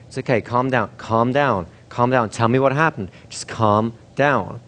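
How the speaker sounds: steady, very firm, no-nonsense, insistent delivery. Demonstrating how to calm a hysterical child, speaking very firmly. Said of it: "You've got to be very firm, very insistent".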